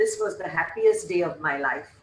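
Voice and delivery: normal talking voice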